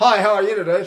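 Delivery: ventriloquist voice, neutral and relaxed. Demonstrating speech to a listener, talking like a ventriloquist. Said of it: "you're talking like a ventriloquist".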